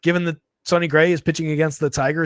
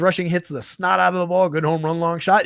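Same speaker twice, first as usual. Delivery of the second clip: ordinary talk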